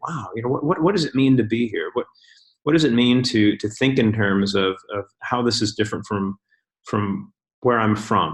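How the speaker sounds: usual speaking voice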